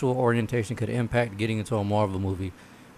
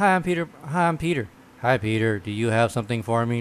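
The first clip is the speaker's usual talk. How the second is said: mock robot-like flat monotone. Acting out a character greeting Peter with no expression: imitating a robot-like voice. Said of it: "Just like a fucking robot".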